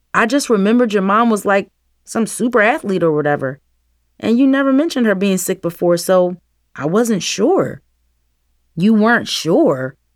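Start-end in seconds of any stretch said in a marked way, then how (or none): 8.7-9.8 words spat out, near-spitting. Nevaeh answers his stammered excuse, spitting the words. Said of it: "Nevaeh almost spat the words".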